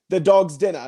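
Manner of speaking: bad fake Australian accent. Showing why their australian accent attempts sound silly: bad australian accent. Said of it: "I can't even do an Australian accent 'cause all mine are like".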